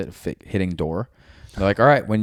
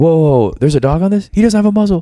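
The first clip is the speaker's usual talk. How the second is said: put-on high, scared, startled, fearful tone; 8 semitones higher, 8 dB louder than usual. Retelling a training mission with an unmuzzled dog: imitating a fearful voice. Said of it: "their fear in their voice was like".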